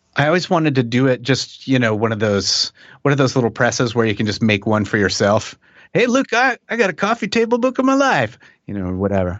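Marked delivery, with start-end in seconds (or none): 5.9-8.3 horrible put-on, very high, swooping Southern accent. Answering a question, the speaker slips into a horrible southern accent.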